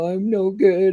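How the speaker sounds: put-on snuffling, tearful, snotty crying voice. Retelling being told to get up, imitating own past crying. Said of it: "all snotty and crying".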